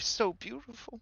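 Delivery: soft, private, very high whisper. Voicing a character gazing at his dragon: whispering to himself. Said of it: "you hear him whisper to himself".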